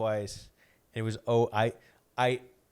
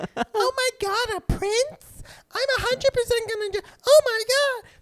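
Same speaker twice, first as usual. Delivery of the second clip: very high, shrill, loud put-on character voice; 8 dB louder than usual. Retelling a woman's excited reply, voices that sound like Elmo. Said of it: "They all sound like Elmo".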